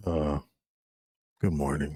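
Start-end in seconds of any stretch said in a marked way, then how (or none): 1.4-2.0 mock flat, bored, dull delivery. Retelling how the other speaker's greeting sounded: imitating a boring greeting. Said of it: "good morning was, like, boring".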